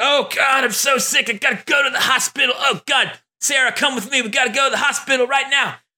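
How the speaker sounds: very high, hammy, fake-sick, over-the-top bad acting. Imitating an actor's over-the-top scene pretending to be sick: mock bad over-the-top acting. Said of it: "That's about the quality of acting that you get in that scene".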